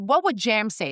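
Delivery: normal talking voice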